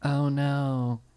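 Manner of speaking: hushed, soft stage half-whisper. Retelling a joke about a zombie movie scene: Tig Notaro half-whisper. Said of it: "Tig Notaro still whispers no matter what's going on".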